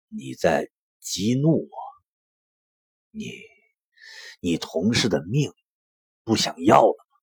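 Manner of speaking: low, forced, squeezed out through gritted teeth. Minyan answers a man who keeps provoking him, through gritted teeth. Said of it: "从牙缝里挤出几个字".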